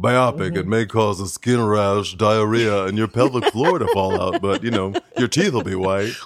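put-on daytime TV commercial announcer voice. Joking that the word sounds like a product advertised on daytime tv, mock tv ad voice. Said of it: "what is that voice".

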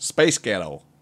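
American-accented delivery. Asked to do it again, saying the phrase in an American accent.

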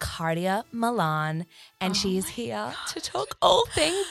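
sultry radio voice. You give an intro you have said many times, in your radio sex voice. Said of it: "It's my radio sex voice".

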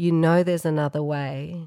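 hushed, soft, confiding half-whisper. Retelling what a nurse secretly said while sitting on the couch: imitating a half-whisper. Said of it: "she whispered to me".

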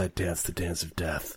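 muffled through a scarf. Voicing a character who pulls a scarf over his mouth: muffled through a scarf. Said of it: "he pulls his scarf over his mouth and he says".

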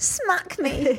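seductive, sexy voice. Retelling an intimate moment, quoting what they said in a sexy voice. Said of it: "I said in a sexy voice to him".

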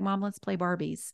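plain

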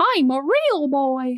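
1950s cartoon boy character voice. Quoting the famous line while comparing impressions, in a 1950s Pinocchio voice. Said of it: "It's that whole like 1950s type of".

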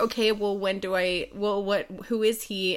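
ordinary delivery

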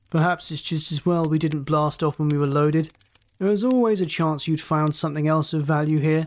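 plain reading voice

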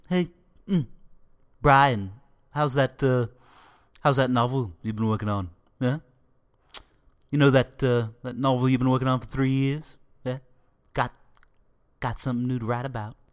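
bad, halting cartoon character voice. Attempting Stewie Griffin teasing Brian about his novel: Stewie Griffin impression. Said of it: "Probably my worst Stewie uh, Griffin impression".

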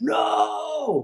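sudden shrill scream, pitched very high. Retelling how the manager jumped up at the meal: imitating Capello screaming.

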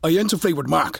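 put-on pushy, confrontational, aggressive southern accent. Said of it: "aggressive southern thing".

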